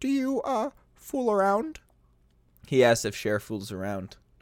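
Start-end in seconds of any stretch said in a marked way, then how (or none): 0.0-1.8 high-pitched frog puppet voice. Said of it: "I don't know how to do a Kermit voice".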